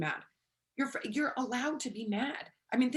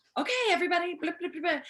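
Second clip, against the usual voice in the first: put-on loud, fast, high-pitched yell, rattled off; 6 semitones higher, 5 dB louder than usual. Calling out to everybody, yelling. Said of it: "oh man, I just yelled".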